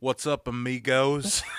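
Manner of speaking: put-on southern American accent, put on. Joking about an actor in a show, imitating the actor's southern accent. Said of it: "here he is with a southern accent".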